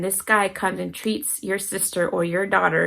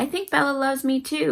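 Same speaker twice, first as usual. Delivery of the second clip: mock thrilled, eager, excited, pitched-up delivery; 7 semitones higher than usual. Retelling what one person excitedly told another, acting super excited. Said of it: "she's super excited".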